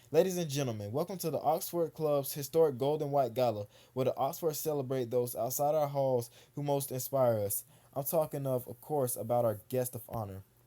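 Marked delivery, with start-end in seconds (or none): none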